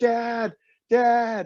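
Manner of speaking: loud shouting.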